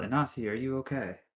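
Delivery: high, loud shouted call. Calling out through fog to a fallen companion: yelling in character. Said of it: "I'm gonna yell".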